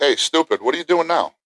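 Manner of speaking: mock very high-pitched, shrill shrieking holler. Retelling what a friend's wife yells: imitating someone yelling. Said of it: "yells at me".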